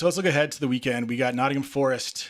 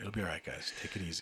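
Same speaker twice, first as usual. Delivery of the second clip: very hushed, soft, soothing meditation-tape calm voice; 6 semitones lower, 14 dB quieter than usual. Calming the listeners down jokingly: put-on calm meditation voice. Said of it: "You should record, like, meditation tapes".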